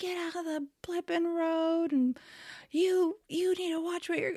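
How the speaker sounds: mock, very high-pitched, furious yelling rant. Retelling a technician cursing at another driver: imitating a yelling man. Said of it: "he was cursing and yelling at someone".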